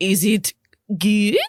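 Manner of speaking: put-on short line in a Russian accent. Voicing a restaurant manager checking on the meal: russian accent. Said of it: "that dude's from Russia for sure".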